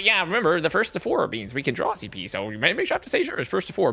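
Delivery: exaggerated put-on geeky nerd voice. Speaker discussing a team roster mimes pushing up glasses: nerd voice. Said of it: "pushes up Glasses nerd voice".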